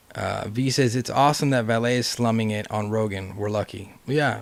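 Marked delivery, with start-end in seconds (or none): none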